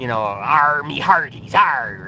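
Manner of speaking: slow movie pirate voice, drawn-out "arr". Explaining where movie pirate talk came from, in a pirate voice. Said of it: "The whole idea of talk like a pirate".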